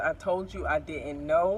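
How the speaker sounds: plain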